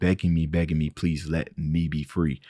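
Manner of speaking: ordinary talk, nothing marked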